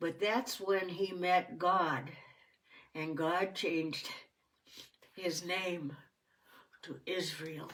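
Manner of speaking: tearful, weeping, crying through the words. Finishing a story, then apologising for the tears: tearful. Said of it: "I'm sorry for the tears".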